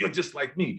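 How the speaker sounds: ordinary delivery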